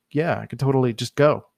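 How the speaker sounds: ordinary delivery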